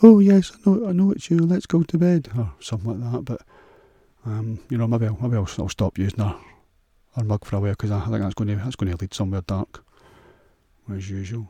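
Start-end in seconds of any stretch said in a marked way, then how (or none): 0.0-2.3 very loud, high-pitched, put-on woman's voice. Pretending to answer himself in a mirror: imitating her voice. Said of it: "use her voice, just go".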